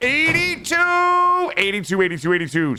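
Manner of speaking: shrill, very high, loud yelling. Calling out a number, then apologizing for it: yelling. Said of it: "Sorry, I didn't mean to yell".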